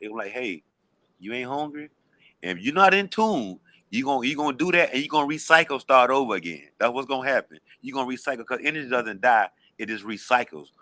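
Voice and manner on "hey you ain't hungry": soft, hushed stage whisper, very close. Acting out the quiet inner voice that gives a suggestion: imitating a half-whispering voice. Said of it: "that voice is a whisper".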